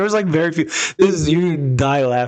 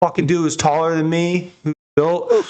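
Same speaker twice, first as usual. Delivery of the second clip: normal talking voice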